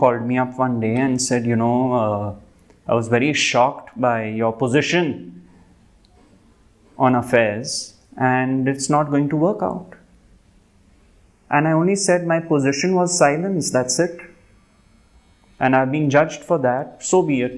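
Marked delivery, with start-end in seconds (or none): 1.5-9.9 mock grave, very somber, drawn-out delivery. Retelling what a woman said when she called the speaker, imitating her very somber tone. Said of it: "in a very somber tone".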